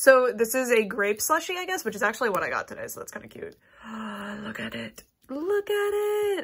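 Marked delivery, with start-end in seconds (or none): 3.9-6.5 very slow, silly, horrible put-on voice, drawn out. Speaker admires a grape slushie cup: horrible put-on voice. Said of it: "I don't know why I did that horrible voice".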